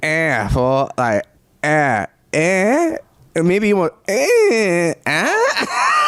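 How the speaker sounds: "eh" with high, questioning rising pitch.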